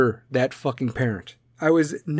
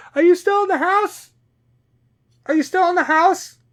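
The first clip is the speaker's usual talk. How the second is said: very high-pitched, loud, carrying shout; 4 dB louder than usual. Retelling shouting from the shower to a kid across the house, retelling a shout. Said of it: "I'm shouting from my".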